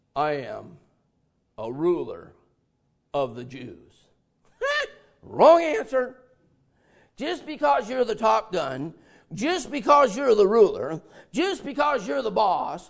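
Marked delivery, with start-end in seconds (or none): 0.1-3.9 mock very low, confident, assured voice, slow. Retelling a man answering whether he was born again, imitating a very confident voice. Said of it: "with a very confident voice says".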